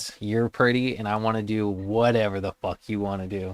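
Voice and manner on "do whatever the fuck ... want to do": ordinary talk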